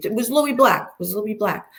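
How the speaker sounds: put-on natural Brooklyn accent breaking through. Telling about a man who hid his phone, Brooklyn accent coming out. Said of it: "my Brooklyn accent comes out".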